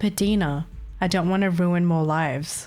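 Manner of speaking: play-acted dead, slow, emotionless, flat line reading. Mocking a character's line that lacks expression: imitating a flat, expressionless line. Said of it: "there should be more expression, but it's just like".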